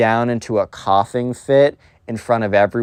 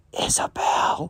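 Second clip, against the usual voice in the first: soft whisper under the breath. Retelling how Johnny whispers to the spoiled kid: whispered Isabel. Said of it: "he sees the spoiled kid whisper like".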